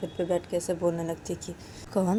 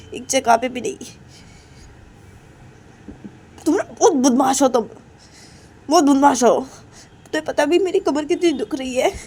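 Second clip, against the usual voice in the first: angry character voice, higher, louder; 7 semitones higher, 8 dB louder than usual. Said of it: "तुम ऐसे गुस्से में क्यों बातें कर रही हो".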